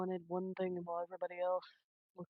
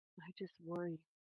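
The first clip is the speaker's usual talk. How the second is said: very hushed, barely-there, soft voice; 5 dB quieter than usual. Speaking in character, voicing a worry: very quiet voice. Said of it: "In a very quiet voice".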